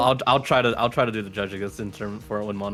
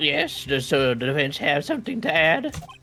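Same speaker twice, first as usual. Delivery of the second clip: put-on old man voice, much higher pitch; 6 semitones higher than usual. Voicing a courtroom judge addressing the defense, in an old man voice. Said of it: "my old man voice".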